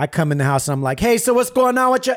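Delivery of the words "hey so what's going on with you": mock, very high, loud raised voice. Retelling coming home and greeting his wife and stepdaughter: retelling his own loud greeting. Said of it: "Why are you screaming at us?".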